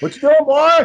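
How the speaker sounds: put-on very high, loud, carrying holler. Recalling talking loud at a family reunion, retelling a yell so he'd hear. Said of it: "I was yelling to make sure he could hear me".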